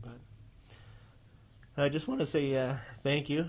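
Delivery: excited voice cracking slightly. A podcast host thanking listeners, voice cracking. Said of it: "I think my voice cracked there a little bit".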